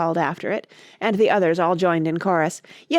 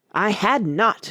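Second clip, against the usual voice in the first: sharp, cutting, very angry, furious outburst. A mouse character retorts to a girl, crying out sharply and very angrily. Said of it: "cried the Mouse, sharply and very angrily".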